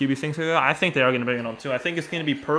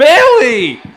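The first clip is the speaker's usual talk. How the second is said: very high, loud yell with voice cracking. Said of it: "the worst voice crack I've ever had in my life".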